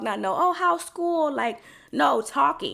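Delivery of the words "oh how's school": high, mock baby-talk voice. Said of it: "not no baby talk".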